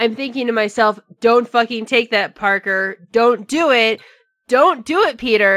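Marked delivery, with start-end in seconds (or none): none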